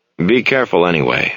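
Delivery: plain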